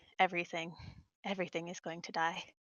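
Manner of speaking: low-key doom-laden murmur. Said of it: "be like".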